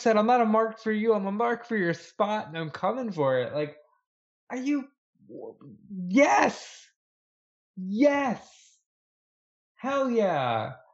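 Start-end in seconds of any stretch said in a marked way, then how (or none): 0.2-3.6 play-acted, dead-serious, fierce, menacing intensity. Quoting a wrestler's threat to a rival: imitating MJF sounding ready to tear your head off. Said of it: "He sounded like he was gonna fucking tear your head off".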